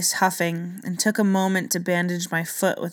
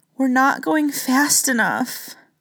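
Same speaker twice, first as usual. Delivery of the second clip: resigned, terrified gasping, much higher; 6 semitones higher, 4 dB louder than usual. As searing heat grows at their backs, he answers the narrator: gasping in resigned terror. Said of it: "He gasped with resigned terror".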